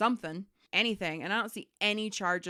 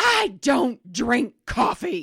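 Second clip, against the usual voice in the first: very loud, slow, drawn-out scream; 4 semitones higher, 11 dB louder than usual. Retelling a bank call, imitating a customer screaming. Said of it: "she's screaming".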